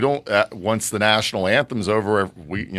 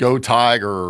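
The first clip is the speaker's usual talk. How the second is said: ordinary delivery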